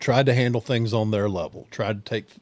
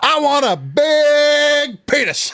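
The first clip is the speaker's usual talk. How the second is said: very high, very slow, drawn-out, loud bellowing yell; 7 dB louder than usual. Retelling a prank call at a drive-through speaker: imitating own past yell. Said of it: "And I yell as loud as I can".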